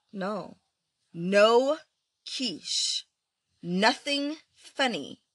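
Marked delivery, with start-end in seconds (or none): 1.2-5.2 emphatic, exclaimed delivery. Showing a reader how to say the line: exclaimed. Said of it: "You have to say with an exclamation point".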